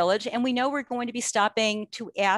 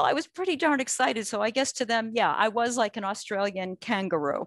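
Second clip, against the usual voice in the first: plain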